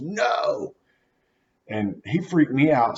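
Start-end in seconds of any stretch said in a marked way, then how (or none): 0.0-0.7 very high, frantic crying voice. Retelling a passenger fighting the wheel: imitating a scream. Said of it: "screams at the top of his lungs".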